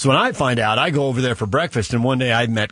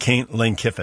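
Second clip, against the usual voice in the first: ordinary delivery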